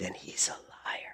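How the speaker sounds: soft, low, conspiratorial whisper.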